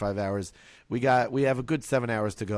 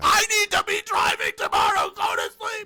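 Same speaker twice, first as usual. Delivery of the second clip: mock very high, shrill, loud top-of-the-lungs scream; 6 dB louder than usual. Retelling yelling at kids who would not sleep: imitating own screaming. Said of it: "screaming at the top of my lungs".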